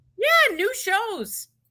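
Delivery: strong, exaggerated Canadian accent, very high. Mentioning that a show has new episodes: super Canadian accent. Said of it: "I just sounded super Canadian".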